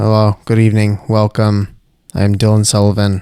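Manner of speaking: sad, downcast voice. A host opens the show with a welcome, sounding sad. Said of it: "You sound so sad".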